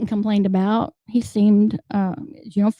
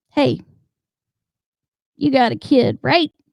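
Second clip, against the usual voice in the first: animated, swooping put-on man's voice; 3 semitones higher than usual. Retelling what a man she had never talked to asked her, doing his voice. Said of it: "So I'll do a little bit of the voice".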